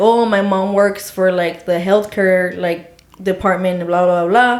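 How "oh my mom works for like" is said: plain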